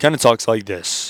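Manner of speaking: imitated low-pitched voice. Speaker tries to mimic a man he describes, imitating a low voice. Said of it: "Let's see if I can mimic him".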